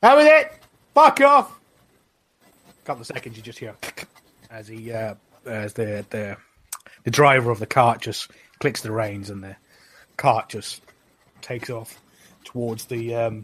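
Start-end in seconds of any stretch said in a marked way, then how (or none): 0.0-1.6 very loud, very high, furious shriek. Voicing a character screaming from behind at someone leaving: screaming. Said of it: "Alpi just from behind just screams".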